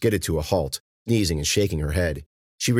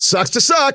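loud, shrill, very high-pitched yell; 6 dB louder than usual. Ben in a fight with two men; yelled. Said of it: "Ben yelled".

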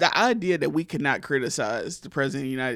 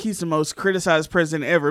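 normal talking voice

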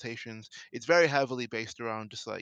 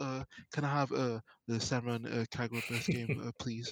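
put-on embarrassed tone. Retelling an ad where a customer asks a cashier for a game: imitating an embarrassed request. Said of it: "he's kind of a bit more embarrassed".

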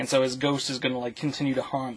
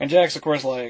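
normal talking voice

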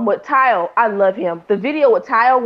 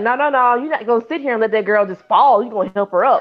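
plain

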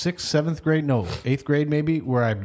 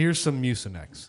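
plain

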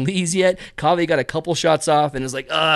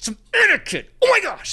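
put-on angry outburst, higher. Retelling how a man grabbed his light and snapped at others: imitating an angry man. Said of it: "he's, like, pissed".

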